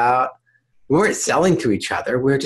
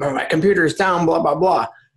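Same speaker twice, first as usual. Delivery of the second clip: put-on frantic, agitated, upset screaming rant; 4 semitones higher than usual. Retelling an upset computer-repair customer on a service call, imitating a screaming customer. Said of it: "they would be just screaming at me like".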